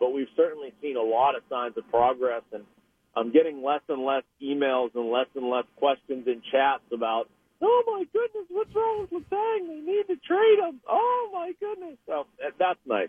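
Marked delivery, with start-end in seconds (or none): 7.6-12.0 very high, squeaky put-on falsetto voice. Quoting emailers' worried questions about letang, in a put-on falsetto voice. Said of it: "apparently speaks in falsetto".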